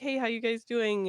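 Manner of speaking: usual speaking voice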